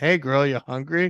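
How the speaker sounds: put-on spaced-out, high-pitched stoned voice. Retelling a movie scene, a guy talking to a horse: imitating a stoned guy. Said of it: "this guy is all stoned".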